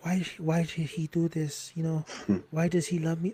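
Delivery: seductive mock French accent. Retelling a character's inner thoughts about a wedding gift: imitating Chané's sexy French voice. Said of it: "she has this sexy French voice".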